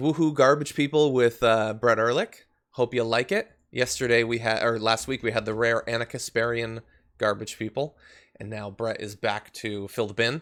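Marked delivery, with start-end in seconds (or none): none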